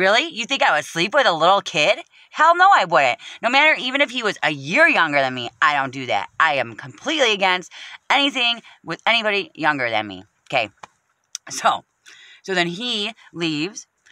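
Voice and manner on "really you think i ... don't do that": put-on incensed, offended outrage with swooping pitch. Recounting being accused of trying to sleep with someone's man, retelling outrage. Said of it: "I'm like fucking outraged".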